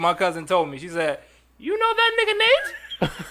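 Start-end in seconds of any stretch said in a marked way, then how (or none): 1.6-3.1 very high-pitched put-on girl voice.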